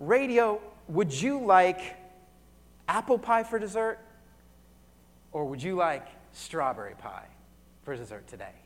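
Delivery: gentle, unhurried, slow, polite voice. Retelling a movie scene where a waitress asks about pie: imitating a slow, polite waitress. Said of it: "she just kinda slowly asks Radio".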